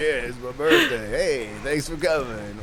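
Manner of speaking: super jovial, tipsy, loud, sing-song cheer. Asked who was most intoxicated, the speaker imitates Tony, mock-jovial. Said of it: "was he like super jovial?".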